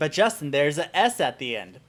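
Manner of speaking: ordinary talk, nothing marked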